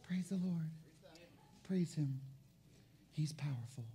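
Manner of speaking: feeble, very quiet, low, whining, barely audible whisper. Speaker mocking timid believers' praise: mock weak whining whisper. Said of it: "sissy, mamby-pamby, whispering, whining believers".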